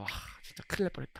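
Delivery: quick quiet whispering.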